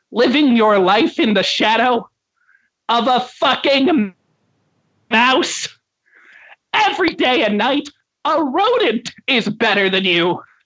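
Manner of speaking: high cartoon voice. Voicing SpongeBob SquarePants, unmasked, explaining himself to a player: SpongeBob voice. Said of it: "SpongeBob SquarePants".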